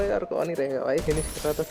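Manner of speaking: normal talking voice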